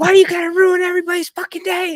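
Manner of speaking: very loud, high, furious shrill screaming. Retelling a woman yelling from a car window at a driver, retelling an angry yell. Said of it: "she's like yelling".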